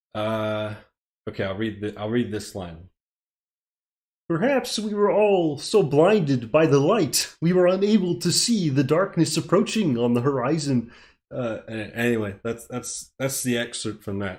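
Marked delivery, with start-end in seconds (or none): 4.3-10.9 put-on puppet frog voice. Reading one line of a script aloud for viewers: Kermit the Frog voice. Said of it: "I will do the Kermit".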